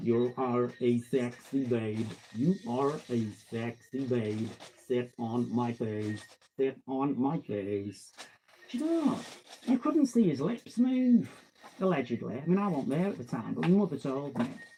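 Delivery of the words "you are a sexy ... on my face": deep voice dropped low, very slow drone. Retelling a chat-up line with lips not moving: Stephen Hawking voice. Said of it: "And he was going like".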